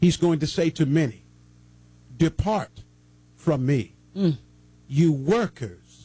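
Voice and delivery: slowed right down, low and deliberate delivery. Addressing the listeners as family, asking them to listen carefully; say it a little slower. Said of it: "Let me say this just a little bit slower".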